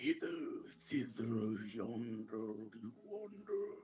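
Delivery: throaty, strange, eerie guttural creature voice. Narrating a scene, the speaker voices a thing that just hit the ground: strange guttural voice. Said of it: "you just hear kind of this strange guttural voice".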